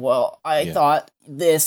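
small, crackly, crackling voice, slow. Describing a scene where Trunks speaks to his dad, Trunks's little crackly voice. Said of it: "he's got his little crackly voice and he's kind of like".

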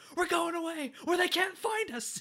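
very high, loud, shrill, frantic, unhinged yell. Retelling a movie scene with the letters: imitating Vernon freaking out. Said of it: "He just snaps. He's just like".

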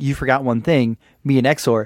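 normal talking voice

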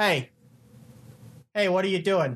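far from mic, sounding odd. Backing away from the microphone to show how it sounds: backed away from the mic. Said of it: "I sound kinda weird".

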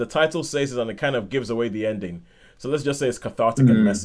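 ordinary talk, nothing marked

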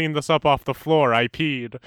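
ordinary talk

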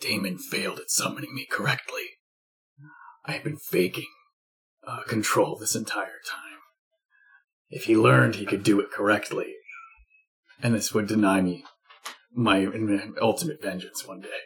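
hushed, low, bitter, very, very raspy voice. Jenkins, the undead butler, speaks up about Damon: a very raspy Jenkins voice. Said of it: "I have my ever-vigilant undead butler. / It, because of the burned way, his voice was very, very raspy. / His name is Jenkins. / his voice was very, very raspy".

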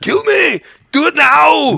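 very loud, high, rough, bad voice, belted badly. Recalling being in Icewind Dale, doing a bad Arnold Schwarzenegger impression. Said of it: "one of the world's worst Arnold Schwarzenegger impressions".

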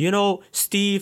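put-on Canadian-sounding accent.

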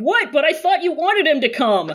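acted oblivious, way too loud, high voice. Imagining a scene with Wei Ying, imitating him talking unnecessarily loud. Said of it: "raising his voice, like, unnecessarily loud".

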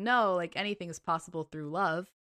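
ordinary talk

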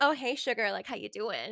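chatty, sweet-talking come-on voice. Retelling a dancer greeting a man at a strip club: imitating a dancer. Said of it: "some dancer comes up to him, and she's like".

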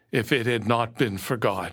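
usual speaking voice

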